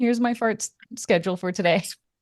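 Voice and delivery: ordinary talk, nothing marked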